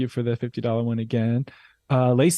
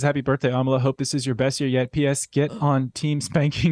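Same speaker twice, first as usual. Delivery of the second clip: ordinary talk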